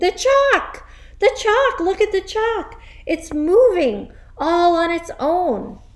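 hysterical, shrill, excited screaming. A boy jumps up in class and points at the blackboard, screaming excitedly. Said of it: "pointing excitedly at the blackboard and screaming".

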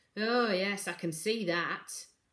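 slow, sour, bitter-edged delivery. Narrator reading a woman answering Morrigan while backing away, with a bitter note. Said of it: "There was a bitter note in her voice".

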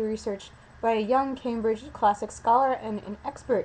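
normal talking voice

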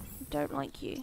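disappointed. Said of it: "You sound so disappointed".

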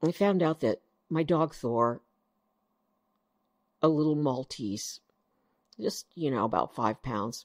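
near tears, fighting back tears. Telling listeners about a very sick dog, on the verge of tears. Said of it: "I'm gonna cry".

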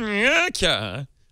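Swedish chef character voice, high-pitched. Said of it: "Say it as a Swedish chef".

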